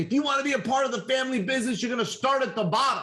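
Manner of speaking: put-on, very high, shrill screamed scolding. Retelling how the older brother told Isaac off: imitating someone screaming. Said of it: "the older brother started screaming at him".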